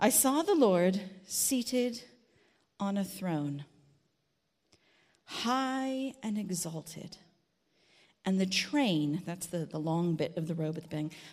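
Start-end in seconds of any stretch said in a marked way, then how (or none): 0.0-9.2 very slow, deliberate, unhurried reading, high and drawn out. Reading a passage aloud so listeners can picture it: reading very slowly. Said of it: "I am unusually going to read very slowly".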